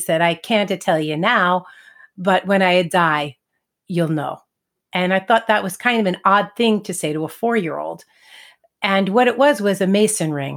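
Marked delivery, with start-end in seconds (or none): 0.2-4.4 put-on thick, heavy Italian accent in English. Retelling the grandfather's answer to a four-year-old's question, heavy Italian accent. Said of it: "in his heavy Italian accent".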